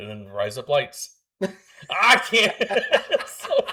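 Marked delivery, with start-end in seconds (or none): 0.3-1.1 put-on Australian accent on the words razor blades. Listing things to say for fun, in an Australian accent. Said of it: "say razor blades in an Australian accent".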